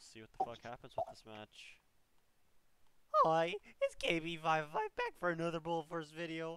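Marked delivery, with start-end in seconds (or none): 3.2-6.6 loud belted voice, letting it crack. Opening a gameplay video as an intro, doing a Dashball impression with voice cracks. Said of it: "Sound like Dashball now".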